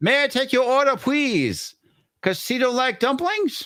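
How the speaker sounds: clumsy, bad, very high-pitched voice. Reading a donation message, then doing a bad impression of City Walk guy. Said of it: "my worst interpre-, or, or impression of City Walk guy".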